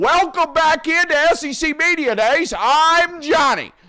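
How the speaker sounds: put-on radio announcer voice, very loud and high. Asked by a co-host to put on one of the young radio host voices, radio announcer voice. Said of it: "Can you put one of these voices?".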